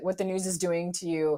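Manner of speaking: ordinary talk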